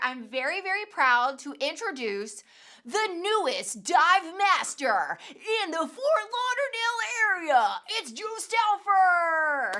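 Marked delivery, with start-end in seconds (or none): 2.9-9.8 big monster truck rally announcer voice, pitched up. Announcing a co-host's new distinction to the audience, in a big wheel truck rally announcer voice. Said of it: "my like big wheel truck rally announcer voice".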